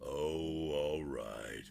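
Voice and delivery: very low, gloomy, droopy donkey voice. Showing how the character Squeeze sounds, in an Eeyore voice. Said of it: "he sounds like Eeyore".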